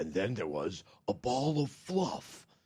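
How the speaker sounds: very deep, slow voice, pushed way down. Imitating a game's storybook narrator: deep James Earl Jones voice. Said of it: "this really deep James Earl Jonas voice".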